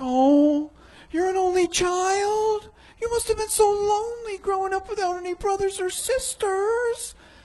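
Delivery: play-acted pitying voice, full of sympathy. An only child retells how people answer on hearing it, imitating a pitying voice. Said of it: "they talk to me in that pity voice".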